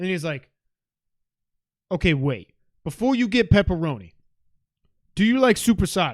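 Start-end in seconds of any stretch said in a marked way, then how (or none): 1.9-6.1 put-on loud, swooping, particular way of talking. Retelling what the man said while grabbing salamis: imitating his way of talking. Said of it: "This is how he talks".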